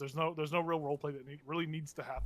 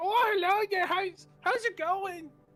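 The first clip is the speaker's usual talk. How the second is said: put-on gleeful, very high, drawn-out old hunchback voice; 9 dB louder than usual. Narrator voices a hunchback greeting those who approach, gleeful character voice. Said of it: "his personality is gleeful".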